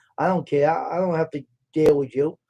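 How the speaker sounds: ordinary delivery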